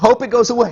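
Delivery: high, light, mock carefree brush-off. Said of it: "Just say".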